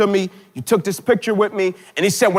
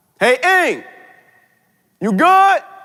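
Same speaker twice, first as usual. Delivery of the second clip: high, drawn-out mock hollering shout; 7 semitones higher than usual. Retelling how a stranger in a car called out: imitating someone screaming out. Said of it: "he screams out".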